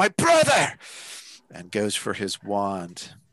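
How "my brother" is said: very high-pitched outcry. Voicing a man whose brother just crumpled: crying out. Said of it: "The guy behind him cries out".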